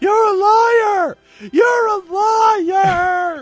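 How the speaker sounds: shrill, loud, slow shriek, "liar" drawn out. Speaker retells a girl with a broom screaming at them, retelling a scream. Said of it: "She was screaming".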